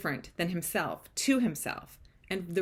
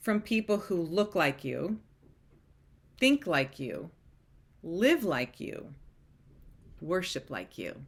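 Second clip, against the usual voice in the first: slow, measured, careful, deliberate word-by-word reading. Reading a received text message aloud to listeners, slowly and deliberately. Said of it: "I'm going to read these slowly".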